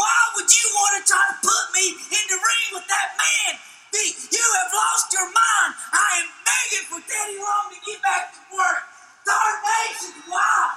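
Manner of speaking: full-blast, very high, panicked West Virginia voice. Reacting to being put in a match with The Undertaker: full-blast West Virginia panic. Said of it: "He goes full blast West Virginia".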